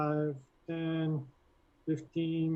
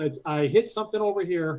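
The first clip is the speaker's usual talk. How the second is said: called out loud. Playing a character in a game who calls out after hitting something: yelling in character. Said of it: "and I will yell".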